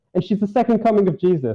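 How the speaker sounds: normal talking voice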